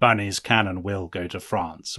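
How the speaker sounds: low, slow, deliberate voice.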